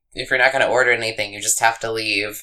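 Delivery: ordinary talk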